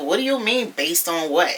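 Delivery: plain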